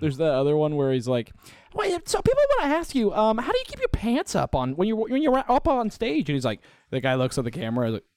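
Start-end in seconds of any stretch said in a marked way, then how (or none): 1.7-6.3 squeaky, very high, swooping sing-song rising tone. Retelling an interviewer's question in a Nardwuar impersonation. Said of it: "really good Nardwuar impersonation".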